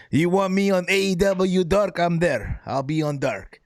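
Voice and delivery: very bad put-on Japanese accent. Answering chat about appearing on AEW Dark, in the worst Japanese accent. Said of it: "worst Japanese accent".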